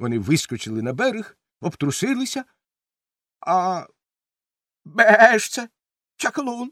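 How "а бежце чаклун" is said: confused goat-like bleat, slower. A narrator reads a boy who has been turned into a goat; confused bleating. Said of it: "розгублено бекнув Вітя".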